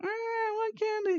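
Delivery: put-on very high, screaming little child voice. Describing a kid in a supermarket who is told no, imitating a screaming kid. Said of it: "the kid starts screaming".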